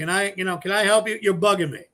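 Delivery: ordinary talk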